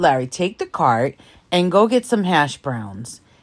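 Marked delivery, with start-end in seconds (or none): none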